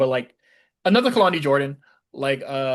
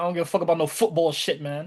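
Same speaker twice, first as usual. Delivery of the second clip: accidentally slipping into an English accent; 3 semitones higher than usual. Mid-conversation, speaker slips into an accidental English accent. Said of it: "was that your English accent?".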